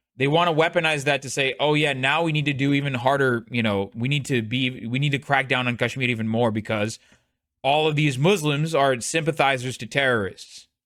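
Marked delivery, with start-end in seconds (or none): none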